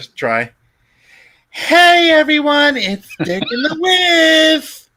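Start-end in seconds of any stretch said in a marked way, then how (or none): 1.5-4.7 very high, loud, exaggerated lisp, drawing out Whiff. Asked to try a voice, the speaker launches a workout bit: Richard Simmons lisping impression.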